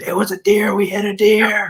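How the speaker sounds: mock very slow, high, stretched-out screaming. Retelling how the driver, John, screamed after the van hit a deer: imitating John screaming. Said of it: "John screaming".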